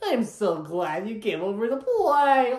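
slow, stretched, deepish but not too deep dinosaur voice. Describing a replacement version of Barney, doing a deep Barney voice. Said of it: "he's supposed to have a deep voice, but not super deep".

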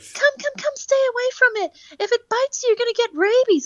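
very high-pitched voice. Retelling how a passing mother spoke near his dog, very high-pitched whaley voice. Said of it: "speaking in a very high-pitched, Whaley type of voice".

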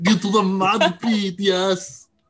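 slow, loud, drawn-out action-movie tough-guy voice. Voicing a Dragonborn fighter in a bar: Arnold Schwarzenegger voice. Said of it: "he's gonna be Arnold Schwarzenegger".

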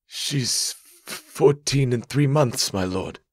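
shaky, quivering, trembling voice. A farmer answers the governor's question: quivering voice. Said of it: "The farmer's voice quivered".

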